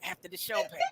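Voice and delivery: put-on whisper. Imitating Maurice whispering into Marianne's ear: imitating Maurice whispering. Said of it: "he over there whispering to, in Marianne ear".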